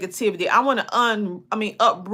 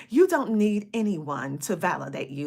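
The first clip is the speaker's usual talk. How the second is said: soft, put-on proper diction; 4 semitones lower, 5 dB quieter than usual. Speaker, who calls themself country, redoes the line in fake proper speech. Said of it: "let me say it proper".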